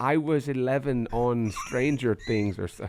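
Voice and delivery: slow, loose, muddled put-on British accent. Retelling what a woman said after being asked to do the accent, some kind of British accent. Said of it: "kind of English, British".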